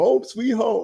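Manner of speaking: very high, shrill, loud, full-throated scream. Retelling a dehydrated lifter after every warm-up: retelling a scream. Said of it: "he's just screaming".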